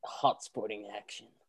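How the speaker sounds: breathy, sultry voice, very hushed. Opening the show, a host tries out a breathy, sultry voice. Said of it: "when you do the breathy, sultry voice".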